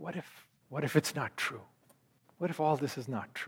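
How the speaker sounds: very quiet, breathy, barely voiced whisper. Retelling the words of dying men in their weakness: imitating a very quiet voice. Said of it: "said with a very quiet voice".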